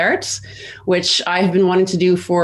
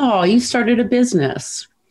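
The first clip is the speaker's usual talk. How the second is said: put-on condescending, patronizing, talking-down tone; 4 semitones higher than usual. Retelling what a hotel gm said on hearing of the business: imitating a condescending tone. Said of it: "say to me very condescendingly".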